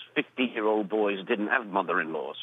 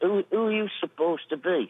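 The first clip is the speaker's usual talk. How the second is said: put-on pitched-up Manchester accent; 8 semitones higher than usual. Retelling what the publican asked him, in the publican's manchester accent. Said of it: "with his Manchester accent".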